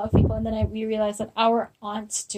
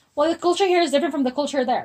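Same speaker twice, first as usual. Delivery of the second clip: irritated, exasperated, annoyed, pitched-up voice; 5 semitones higher, 3 dB louder than usual. Speaker re-enacting what they once told someone, imitating self sounding annoyed. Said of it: "in an annoyed voice that I was like".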